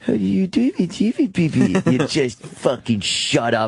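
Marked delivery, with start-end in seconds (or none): 0.0-1.8 put-on very high, sugary, cutesy baby talk. Mocking how a man talks on television, mocking cutesy talk. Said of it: "the cutesy fucking talk".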